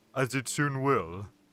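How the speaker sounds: ordinary delivery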